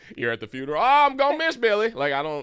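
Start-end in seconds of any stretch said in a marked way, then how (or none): 0.9-1.9 shrill, very loud, very high fake cowboy accent. Acting out someone at a funeral in cowboy boots: put-on accent. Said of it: "and then you get an accent".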